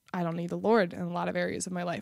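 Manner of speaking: ordinary talk, nothing marked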